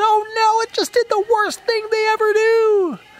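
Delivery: very high, loud, panicked shrieking scream. Retelling jumping back from a frog with a child: imitating own past screaming. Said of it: "and I start screaming".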